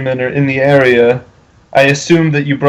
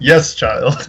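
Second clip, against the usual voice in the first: affected, self-important, pretentious put-on voice. Speaker answers in a convincing voice: pretentious Greenwood imitation. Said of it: "I say in my most like pretentious Greenwood imitation".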